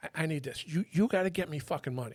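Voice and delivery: put-on worked-up, insistent, pissed-off, stumbling delivery. Retelling how an undercover came in demanding money: imitating Mario pissed off. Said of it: "he's all pissed off".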